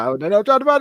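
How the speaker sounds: pure panic, very high-pitched voice. Teasing the other speaker by imitating their panicked voice. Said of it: "I just hear pure panic in your voice".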